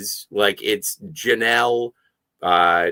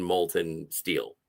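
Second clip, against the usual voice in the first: ordinary delivery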